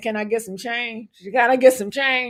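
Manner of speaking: pleading, begging, beseeching tone. Imitating a homeless person on a corner asking for change: imitating a homeless person begging. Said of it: "Like a homeless person saying".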